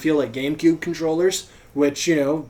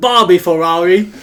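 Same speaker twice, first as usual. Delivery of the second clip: very loud put-on Australian accent; 3 semitones higher, 9 dB louder than usual. Asked to repeat a brand name in an Australian accent: Australian accent. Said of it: "can you say that in an Australian accent?".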